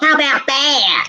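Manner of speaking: put-on Chicago Midwestern accent. Impersonating someone doing an impression of the listener: imitating a Chicago Midwestern accent. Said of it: "me impersonating the witch doing an impersonation".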